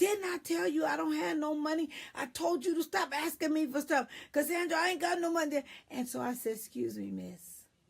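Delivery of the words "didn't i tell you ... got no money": shrill, loud yelling in a motherly voice. Retelling a woman in a store yelling at her son, imitating her yelling. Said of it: "she was yelling at her son".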